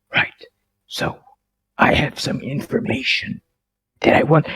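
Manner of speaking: whisper-like voice. A player speaks in character at the game table, whispery voice. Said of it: "I sound like I'm whispering, but I'm actually screaming".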